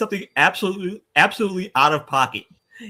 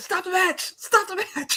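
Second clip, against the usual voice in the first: put-on panicked commentator yell, higher and quieter; 14 semitones higher, 4 dB quieter than usual. Retelling a wrestling commentator's panicked call: imitating Bobby Heenan panicking. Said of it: "you can hear Heenan say".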